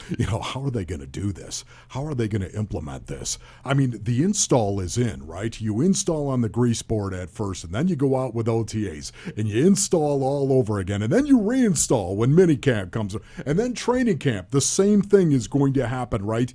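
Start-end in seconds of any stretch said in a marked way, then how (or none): 0.4-3.4 low, soft mumble, as if to oneself. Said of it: "mumbling to myself".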